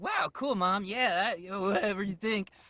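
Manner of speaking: goofy, very high-pitched, loud cartoon voice. Voice actor demoing the character they've voiced for a decade, goofy Thunk voice. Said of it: "the character I do is such a goofy".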